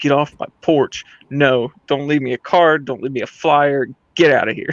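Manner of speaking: put-on angry voice. Retelling ordering a salesman off the porch: retelling own angry words. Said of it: "I'm straight up just pissed at this dude".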